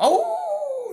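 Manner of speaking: very high howling like a wolf.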